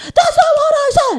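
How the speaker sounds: high, loud, laughing mock outburst.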